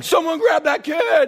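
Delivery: acted, very high-pitched, shrill yelling. Retelling a moment in a Lego ride line, retelling a yell. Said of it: "I'm yelling".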